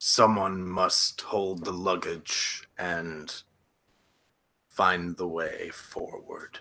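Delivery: low, through somewhat gritted teeth. A character answers a questioner about the servant travelling with him, through somewhat gritted teeth. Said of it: "He just says with somewhat gritted teeth".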